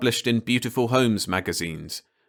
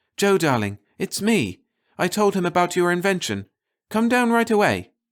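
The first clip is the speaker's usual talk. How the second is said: eager, thrilled, high, swooping voice; 9 semitones higher, 3 dB louder than usual. Reading a woman phoning the narrator at his laboratory: excited voice. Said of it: "Mary's excited voice said".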